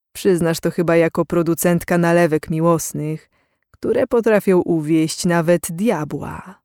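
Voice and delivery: ordinary delivery, nothing marked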